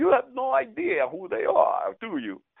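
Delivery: put-on very high, swooping, sing-song Italian accent. Retelling what a buddy said about some laughing women, in his italian accent. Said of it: "in his Italian accent".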